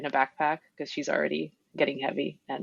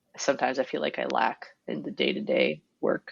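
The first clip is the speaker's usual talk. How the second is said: ordinary delivery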